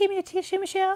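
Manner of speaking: very high, silky-smooth little voice. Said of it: "use [name]'s soft fucking voice".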